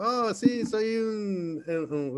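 slowed-down, slightly high creature voice. Describing how a cartoon character sounds: imitating King Shark's voice. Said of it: "lo empiezas a escuchar con su voz así como que".

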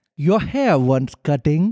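haughty, stuck-up, unhinged cartoon king voice. Asked to be King Julian, the speaker reads a story line: King Julian voice. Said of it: "Can you be King Julian from Madagascar?".

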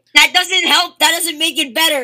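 loud, squealing indignation.

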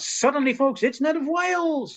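very high, slow, drawn-out shout. Retelling jumping in to interrupt a speaker on stage: retelling a yell. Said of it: "jumped through and yelled out".

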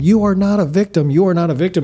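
mock insistent, half-shouted, high-pitched, mild yelling. Retelling what she yelled at him: imitating someone yelling. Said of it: "and she yelled at him".

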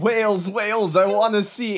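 acted, wild, excited high-pitched shrieking. Recapping the episode, the host quotes Basara: imitating Basara screaming. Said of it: "He's just screaming".

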